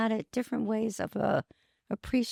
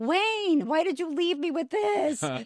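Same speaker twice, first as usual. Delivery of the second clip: teasing, pitched-up voice through laughter; 7 semitones higher than usual. Speaking aloud to wayne, laughing. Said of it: "with laughter".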